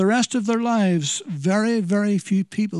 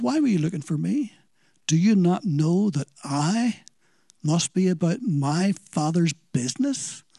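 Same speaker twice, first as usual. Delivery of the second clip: quiet, serious delivery. Retelling the twelve-year-old's reply to his mother, a quiet, serious reply. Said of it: "very quietly, but very seriously".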